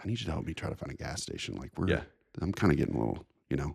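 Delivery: kept-down, hushed, under-the-breath voice. Retelling asking for help finding a gas station so kids won't hear: retelling a quiet remark. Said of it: "I'm trying to say it real quiet".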